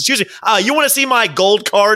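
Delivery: put-on, riled-up, rowdy, confrontational voice. Retelling an uncle arguing with hotel staff: imitating a rowdy uncle. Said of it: "my uncle got very, very rowdy with them".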